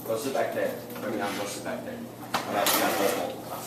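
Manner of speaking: quiet, soft, low-voiced aside.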